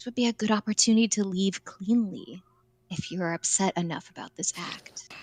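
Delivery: barely audible, very soft, hushed half-whisper. In a role-playing game, leaning in close to Hamlin, a very quiet half-whisper. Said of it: "I'm going to very very very quietly whisper".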